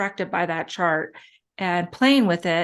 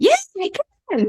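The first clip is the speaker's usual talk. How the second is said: put-on tiny, cute, very high little child voice; 12 semitones higher, 4 dB louder than usual. Retelling a child's answer, imitating a cute little voice. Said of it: "in that cute little voice".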